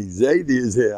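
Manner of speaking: ordinary talk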